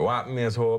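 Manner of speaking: casual, put-on Jamaican accent. Speaker retelling how they greeted an actress from the show, in a Jamaican accent. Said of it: "say stuff to her in in a Jamaican accent".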